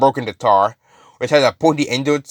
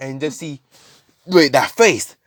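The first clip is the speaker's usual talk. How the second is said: ordinary talk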